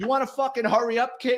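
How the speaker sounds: put-on high-pitched screaming, yelled out. Retelling a man in line screaming at the speaker: imitating someone screaming. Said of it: "he starts screaming at me".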